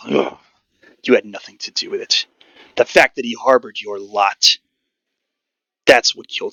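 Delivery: very angry scoff. Voicing a character who blames a player's people, very angry scoff. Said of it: "gives a very angry scoff".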